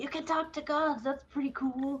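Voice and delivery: put-on stage whisper. Mimicking someone's stage-whispered hint to another player: imitating a stage whisper. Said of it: "The stage whisper".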